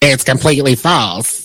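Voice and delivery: dropped, deep character voice. Quoting a celebrity's response to rumors: Madea voice. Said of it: "That was my Madea voice".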